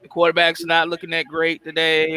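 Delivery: normal talking voice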